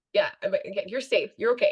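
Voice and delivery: ordinary talk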